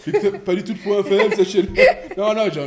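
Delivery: loud, high, laughing, mock boastful and proud.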